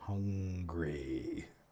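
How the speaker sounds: deep, drawn-out creature moan welling up. Voicing a yogurt monster gaining on the players: deep welling moan. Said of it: "you hear this deep welling moan".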